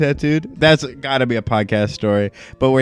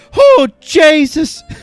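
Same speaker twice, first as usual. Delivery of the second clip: put-on high, loud pained cry with slight Irish accent; 7 dB louder than usual. Retelling how a tattoo client cried out: imitating an irish client's pained cry. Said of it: "the little grunts and then just a".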